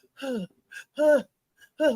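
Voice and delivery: put-on heavy panting breaths. Explaining a partner's sounds to Tyrese, imitating heavy panting. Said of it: "when he take that breath".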